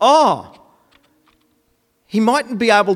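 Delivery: scornful, jeering voice. Retelling how Elijah mocked those trying to convince Baal, retelling mocking speech. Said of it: "He was mocking them".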